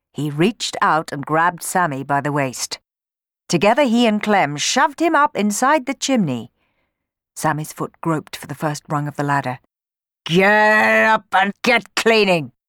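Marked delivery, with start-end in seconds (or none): 10.2-12.5 loud, slow, menacing boom, "get" drawn out. Shoving a boy up the chimney, he orders him to clean, booming menacingly. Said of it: "boomed Bob menacingly".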